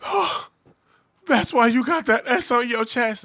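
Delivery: play-acted, very high, screamed shrieking cry. Acting out a joke scene in bed with Superman: Lois screaming. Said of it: "Lois over there screaming and shit".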